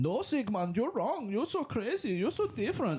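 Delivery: clumsy put-on German accent, very high and swooping. Retelling doctors in a Freud TV show, attempted German accent. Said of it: "That was my attempt at speaking uh, a German accent".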